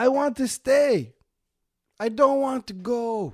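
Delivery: really bad put-on Jamaican accent, high and slow. The speaker voices a woman as imagined in their head: terrible jamaican accent. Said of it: "am I making her Jamaican?".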